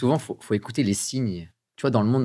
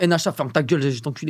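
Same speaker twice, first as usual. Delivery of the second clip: aggressive Parisian street talk; 4 semitones higher than usual. Imitating how people talk in Paris: imitating aggressive Parisians. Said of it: "ils sont agressifs à Paris".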